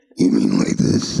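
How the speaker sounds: very low voice. Answering another speaker who said her voice goes low: very low voice. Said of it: "not quite that low".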